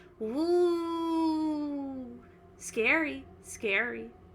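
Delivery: high creature voice, drawn-out woo. Voicing a tentacled creature speaking into the players' minds: voicing a tentacled flump creature. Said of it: "you hear in your mind go".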